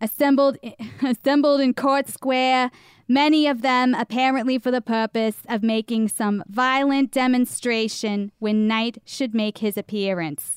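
bad put-on Boston accent. Reading an old newspaper account aloud to the other speaker: bad Boston accent. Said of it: "I guess I have to do a Boston now".

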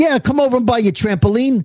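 put-on Staten Island local's accent. Retelling what a seller said about buying a trampoline: imitated Staten Island accent. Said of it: "her accent was like".

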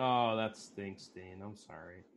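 slow, insincere sympathy laced with sarcasm. Consoling a player who just got beat on the river, sarcastic mock compassion.

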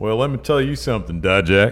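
practised southern American accent. Speaking to Dijak while joking around, southern accent. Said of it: "that's a really good southern accent".

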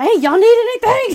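very high, very loud scream. Recounting a case, acting out the sheriff calling to a car's passengers: retelling a scream. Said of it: "He just screams".

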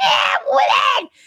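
very high-pitched peacock call. Describing peacocks screaming at the women at night, imitating a screaming peacock. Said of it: "they would scream at us like".

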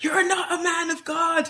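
high, slow, stretched-out shrieking scream. Retelling a film scene where a character screams at a priest: imitating a scream. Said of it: "she just starts screaming at him".

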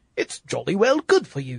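mock, put-on British accent. Mimicking how they say it, in a put-on British accent. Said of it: "they're saying it with a British accent".

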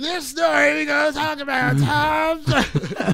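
put-on raspy child narrator voice. Imitating the other speaker narrating tom sawyer as a kid: imitating a raspy kid narrator. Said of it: "Was your voice that raspy as a kid?".

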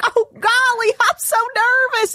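put-on very high, slow, drawn-out, heavy Southern accent. Imitating a reality show contestant, Tia: imitating Tia's intense Southern accent. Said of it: "intensely Southern thing".

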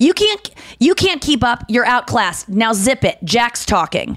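sharp, barked, rebuking tone. Recounting turning on a man who kept talking, retelling a bark. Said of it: "I turned and barked".

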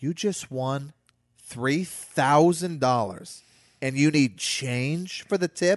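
slow, sassy delivery in a big woman's voice. Retelling what a lady who served drinks asked: imitating a sassy woman. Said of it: "big sassy broad".

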